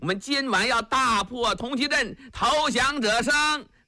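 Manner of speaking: high, hollering shout at the top of his voice.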